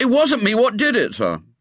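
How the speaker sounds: very high, indignant, outraged innocence. A pupil protests his innocence after being given lines: indignant. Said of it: "said William indignantly".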